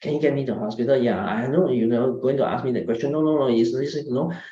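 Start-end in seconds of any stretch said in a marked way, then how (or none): 0.0-1.0 very fast, rushed, rapid-fire rattled-off delivery. Showing how someone asks to be taken to hospital: very fast speech. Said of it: "if you are talking in a very fast tone of voice".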